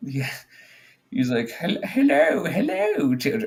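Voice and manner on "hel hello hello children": put-on goofy, very high, sing-song old-grandpa voice. Imitating a cartoon character's greeting: goofy old grandpa voice. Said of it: "very goofy old kind of, like, grandpa".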